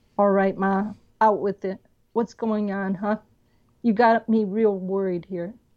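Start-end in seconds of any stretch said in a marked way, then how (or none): none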